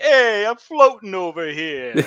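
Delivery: booming fake Italian accent. Joking that a possessed character's accent turns Italian: put-on Italian accent. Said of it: "his British accent turns into an Italian accent".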